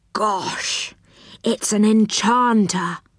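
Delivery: frightened stage whisper, drawn out. Narrator reads Moonface on seeing an enchanter, half-whispering in a fright. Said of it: "whispered Moonface in a fright".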